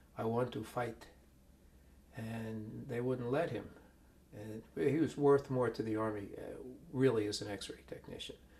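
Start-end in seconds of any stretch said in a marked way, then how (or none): 0.2-1.1 put-on accent blending Russian and American. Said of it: "with his Russian-American accent".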